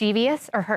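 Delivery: plain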